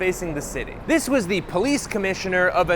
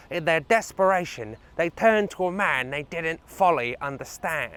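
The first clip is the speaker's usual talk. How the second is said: put-on British accent; 3 semitones lower than usual. Quoting a man in his accent and about to ask whether it is close, in a Michael Caine accent. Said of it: "the accent is".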